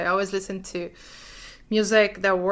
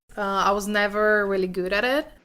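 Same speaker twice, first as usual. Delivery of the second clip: misplaced stress, leaning on it and never. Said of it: "Thais stresses the unimportant pronoun it".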